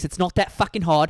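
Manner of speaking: poor put-on British chef voice. Mocking cooking advice in a bad Gordon Ramsay impression. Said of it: "your Gordon Ramsay is bad".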